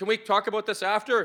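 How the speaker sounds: re-enacted yelling. Recounting answering an audience member who kept calling out, retelling a yell. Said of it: "Like I'm yelling this".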